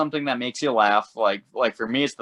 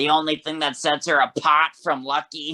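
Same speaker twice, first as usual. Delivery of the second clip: put-on cranky old woman voice with Brooklyn accent; 5 semitones higher than usual. Describing one of their own characters, a grumpy old lady: Brooklyn accent, grumpy old lady. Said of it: "she's got kind of a Brooklyn accent like this".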